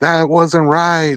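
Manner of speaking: acted high, heated, indignant outcry. Retelling a commentator's outburst when a fighter got robbed: imitating Teddy yelling. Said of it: "he was standing up and yelling and saying".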